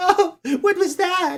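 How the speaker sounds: mock scared, startled, high and slow. Retelling a scary story, acting out the girl in the car: imitating a scared girl. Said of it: "All scared".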